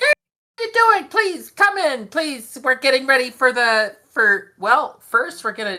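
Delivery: shrill, very high, loud little voice. Describing a woman who greets you, imitating her high-pitched voice. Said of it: "she's got this this this high pitched voice".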